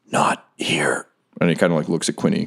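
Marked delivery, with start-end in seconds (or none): 0.1-1.0 low, rasping, rough-edged voice. Voicing a character in a shared scene, rasping. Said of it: "he sort of like rasps".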